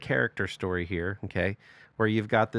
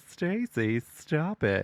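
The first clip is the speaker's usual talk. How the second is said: ultra-passive, toothless sing-song, pitched up; 5 semitones higher than usual. Retelling a mom answering her screaming daughter, imitating an ultra-passive mom. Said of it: "doing the whole ultra passive".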